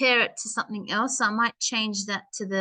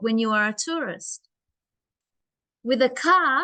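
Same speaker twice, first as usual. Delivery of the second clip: clear, full pause heard after tourist. Teaching how a full stop should sound: pause after tourist. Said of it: "the full stop, it should sound like this".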